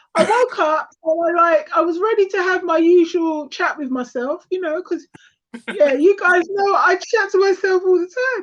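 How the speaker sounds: high, strained lost voice pushing words out. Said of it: "and she lost her voice".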